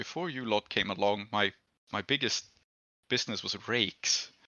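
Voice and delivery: muttered under breath. Voicing a character's aside to the group, muttered under his breath. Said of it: "under his breath says".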